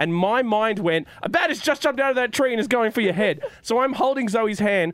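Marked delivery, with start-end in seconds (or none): none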